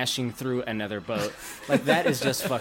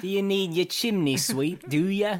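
put-on London Cockney accent, pitched up; 6 semitones higher than usual. Trading accent bits with the group: Cockney accent. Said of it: "That's a cockney".

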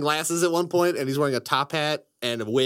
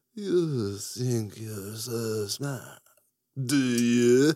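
theatrical, dramatic vampire count voice; 3 semitones lower than usual. Showing a voice they still like to talk in, Gary Oldman Dracula voice. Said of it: "talk like the Gary Oldman Dracula".

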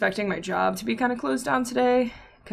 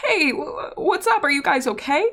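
put-on, pitched-up voice choking back tears; 7 semitones higher than usual. Recounting phoning their dad during a panic attack, retelling choking back tears. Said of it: "so I like choke back my tears real quick and I'm like".

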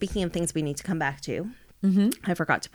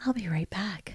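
patronizing cabin-crew flight attendant service voice; 3 dB quieter than usual. Performing a line after being asked for a flight attendant voice. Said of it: "Use your flight attendant voice".

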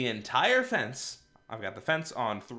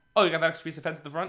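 very fast, rapid-fire, words tumbling out; 4 semitones higher than usual. Quoting someone asking about removing the extra fence piece: very fast speech. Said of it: "I'm going to start speaking really fast. This is intentional".

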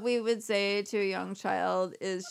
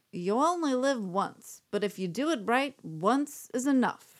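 drawn-out sultry voice; 3 semitones higher than usual. [name] does celebrity voices and tries one out for a listener, in a Mae West voice. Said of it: "I'm going to try to do Mae West voice".

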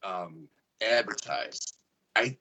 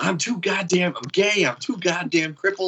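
put-on pitched-up all-out scream, words hurled out; 8 semitones higher, 4 dB louder than usual. Retelling a campaign commercial: imitating Joe Exotic screaming. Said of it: "screaming like that".

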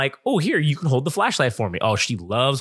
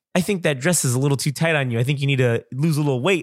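ordinary delivery

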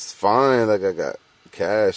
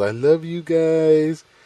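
put-on very high, very slow yell, "guys" drawn out; 9 semitones higher than usual. Retelling a goodbye yelled at school drop-off: imitating someone yelling.

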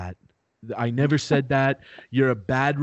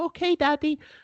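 put-on very high, small little-kid voice. Retelling own past words to a parent: imitating own little-kid voice. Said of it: "that is how I talked when I was a little kid".

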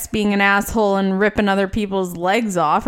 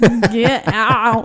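imitated slurred drunk speech, put-on drunken slurring; 2 semitones higher, 4 dB louder than usual. Imitating the speaker's drunk grandpa yelling, with slurred drunk speech. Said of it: "so it would be very slurred".

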